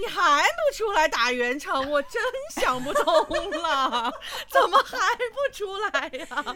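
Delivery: high, loud, laughing mock exasperation.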